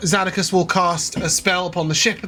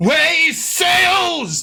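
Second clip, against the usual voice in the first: very high, booming, magnified-sounding cry; 11 semitones higher, 3 dB louder than usual. A game narrator voices a character's spell-magnified call, booming magnified voice. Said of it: "your voice booms out".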